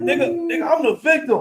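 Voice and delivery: very high, blubbering crybaby wail.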